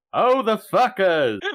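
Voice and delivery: sudden, high-pitched blurted-out shout. In a role-play scene, narrating their own action, then yelling out. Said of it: "And I just yell out".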